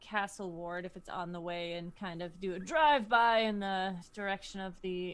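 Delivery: odd, dramatic delivery with "drive-by" drawn out.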